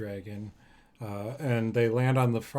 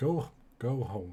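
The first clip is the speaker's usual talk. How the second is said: put-on disappointed, scolding nanny character voice. The game master voices a character sending people back to their rooms, disappointed nanny voice. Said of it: "he's like a disappointed nanny".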